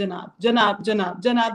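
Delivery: normal talking voice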